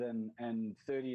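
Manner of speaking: plain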